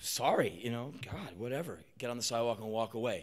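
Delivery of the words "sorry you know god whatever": put-on timid, meek, sheepish, self-effacing apologetic tone. Retelling how they used to react to a beeping truck: imitating own meek past apology. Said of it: "my action would be like".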